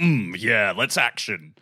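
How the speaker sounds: deep bassy voice. Podcaster comparing the male and female game heroes, doing male Commander Shepard's voice. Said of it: "a very deep, bassy voice who's like".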